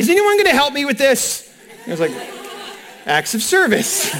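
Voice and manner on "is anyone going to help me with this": play-acted high, raised child's yell. Telling how a father's son yelled out while taking a quiz, retelling a yell. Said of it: "one of his sons just yelled out".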